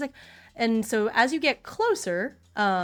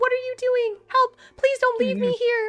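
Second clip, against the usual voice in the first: high-pitched character voice, higher and louder; 13 semitones higher, 5 dB louder than usual. Voicing a woman pleading over a loudspeaker: high-pitched voice. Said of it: "I'm making her voice so high".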